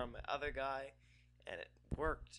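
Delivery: quiet, hushed talk.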